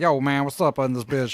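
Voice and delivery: acted tight, strained throat voice. Showing the others the Geordi La Forge voice, pinching the neck. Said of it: "pinch my neck and just kinda be like".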